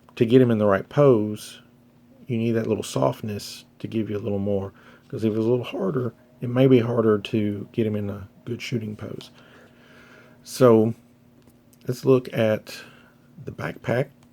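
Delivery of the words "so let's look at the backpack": voice breaking within phrases, slow and halting. Moving on to the backpack in a review, the speaker talks with voice cracking. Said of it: "my voice is cracking bad".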